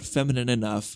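ordinary delivery

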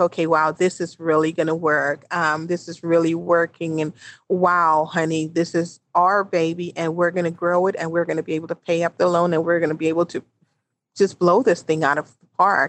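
normal talking voice

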